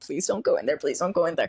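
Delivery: tearful, crying, pleading voice. Retelling chasing after friends and begging them: imitating own past crying plea. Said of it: "chasing after them, like, crying".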